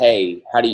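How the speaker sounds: ordinary delivery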